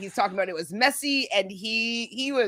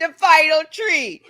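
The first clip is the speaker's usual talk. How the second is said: put-on Jamaican accent, mocking, high-pitched and loud; 7 semitones higher, 8 dB louder than usual. Repeating a phrase during a joking exchange, in a put-on Jamaican accent. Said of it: "I'm allowed to make fun of this accent".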